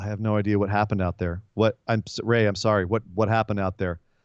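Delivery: put-on very quiet voice. Retelling what a wrestler said after the match, very quietly. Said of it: "very quietly goes".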